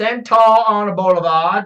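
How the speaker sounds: put-on Australian-accented speech. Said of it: "An Australian".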